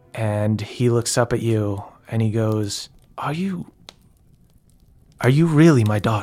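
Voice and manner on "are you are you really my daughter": halting, stunned tone full of disbelief. Voicing a stunned character meeting his daughter: disbelieving in character. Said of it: "sitting there in disbelief".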